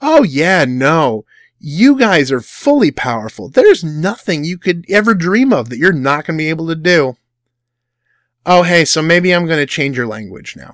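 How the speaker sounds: heavy sarcasm with overstated, exaggerated praise. Rereading God's words with the sarcasm framework: acting out sarcastic God. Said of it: "let's look at this again".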